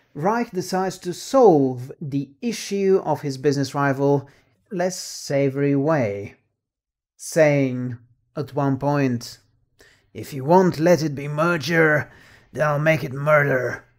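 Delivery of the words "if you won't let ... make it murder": put-on American accent. Summarizing a plot, quoting a character's line in an American accent. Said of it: "That's my American accent".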